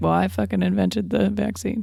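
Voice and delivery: ordinary talk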